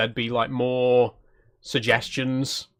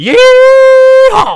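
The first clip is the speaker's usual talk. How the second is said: very loud put-on American shout, higher pitched; 17 dB louder than usual. Reacting to an eagle on screen: very loud mock American yell. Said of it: "That was also much louder than I was expecting".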